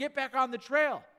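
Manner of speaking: high, mock yelled shout. Retelling what a ranger yelled at a man off the trail: retelling a ranger's yell. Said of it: "the ranger yelled at him".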